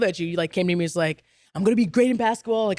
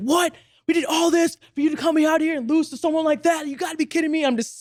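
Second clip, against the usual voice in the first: mock-furious, much higher-pitched put-on voice; 6 semitones higher than usual. Retelling his dad's reaction to hearing he wants to quit tennis, imitating a furious father. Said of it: "He comes around the corner like furious".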